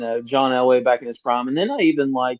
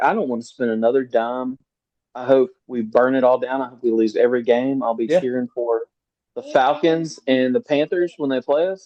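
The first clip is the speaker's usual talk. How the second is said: usual speaking voice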